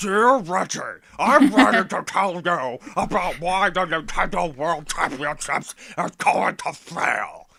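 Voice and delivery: very loud, high, put-on angry ranting fat man voice. Reading an open letter aloud at the other speaker's suggestion, angry fat dude voice. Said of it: "You should do it in the angry fat dude voice".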